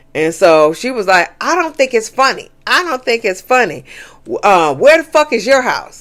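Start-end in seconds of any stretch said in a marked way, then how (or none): 1.4-6.0 high, aggressive, combative, confrontational delivery. Retelling an argument where someone was told she was being aggressive: imitating Rosie being aggressive. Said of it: "you being very aggressive".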